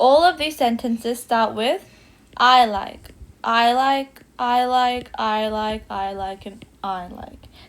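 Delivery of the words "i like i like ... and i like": dull, boring, flat monotone, very slow. Showing learners how repeating the same opener sounds: boring, monotonous delivery.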